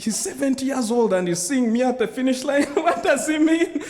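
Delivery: high, laughing disbelief.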